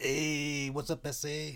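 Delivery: fake French accent, laid on thick. Asked by a co-host to say hello in a french accent. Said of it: "do a French accent".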